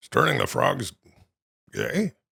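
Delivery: confused, puzzled delivery. Running through one man's line in different tones, now do the mock-confused Alex Jones impression.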